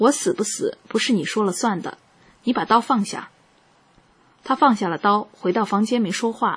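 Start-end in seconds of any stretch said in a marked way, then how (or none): none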